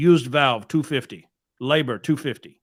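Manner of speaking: put-on thick, laid-on Eastern European accent. Retelling what a guy told him about a used valve: thick Eastern European accent. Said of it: "really thick Eastern European accent".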